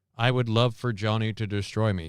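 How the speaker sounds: ordinary talk, nothing marked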